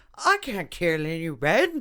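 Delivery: slow put-on British accent, creature voice. Retelling a How to Train Your Dragon scene, the speaker quotes the dragon in a British accent. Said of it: "And it's got a British accent".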